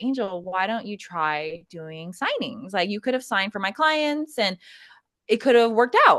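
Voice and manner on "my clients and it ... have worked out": ordinary talk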